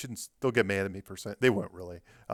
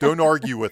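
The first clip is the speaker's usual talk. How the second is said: mock snarky, sarcastic tone, higher and louder; 4 semitones higher, 8 dB louder than usual. Retelling how Blake insisted on page twelve: imitating a snarky, sarcastic tone. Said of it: "he kinda had this snarky, sarcastic way".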